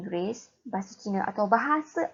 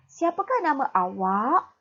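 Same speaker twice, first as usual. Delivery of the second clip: rising pitch on awak; 5 semitones higher, 3 dB louder than usual. Teacher showing students question intonation in Malay, rising intonation on awak. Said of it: "pada akhir ayat, intonasi kamu dinaikkan".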